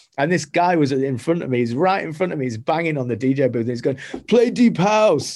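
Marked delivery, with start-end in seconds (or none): 4.3-5.4 put-on, loud, high, pushy, demanding shout. Retelling a guy banging on the DJ booth: imitating someone shouting. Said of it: "shouting at me to play deep house".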